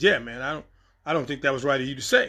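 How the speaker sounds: ordinary delivery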